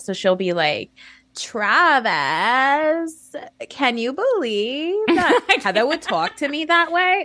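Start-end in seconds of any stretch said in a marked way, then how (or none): 1.4-7.2 put-on Valley Girl voice, Long Island accent. Imitating a Housewives cast member's speech: imitating a Long Island Valley Girl accent. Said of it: "oscillates between Long Island, like, a big Long Island, and Valley Girl".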